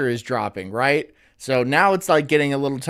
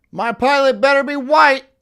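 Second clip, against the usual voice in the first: put-on very high, loud yelling shout; 11 semitones higher, 5 dB louder than usual. Retelling a man yelling racist remarks on a flight, retelling a shout. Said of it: "I'm shouting down the cockpit".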